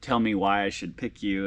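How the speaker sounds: normal talking voice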